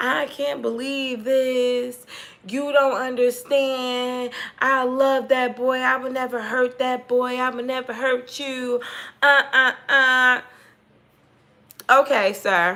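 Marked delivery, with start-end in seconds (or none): 0.0-10.4 mock blubbering, slow, sobbing, tearful. Retelling how a bailiff pleaded at the door: imitating someone crying loudly. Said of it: "he is crying at the top of his fucking lungs".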